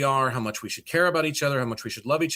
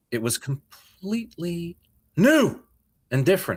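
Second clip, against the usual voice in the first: loose, half-hearted actor voice, not fully committed; 4 semitones higher than usual. Reporting what he said after coming back from space, do a William Shatner impression. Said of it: "I'm not even doing my best Shatner".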